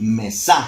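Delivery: mesa with final syllable sa stressed. Explaining Spanish word stress, stress on sa in mesa. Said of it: "si yo quisiera ubicarle el acento en la última sílaba".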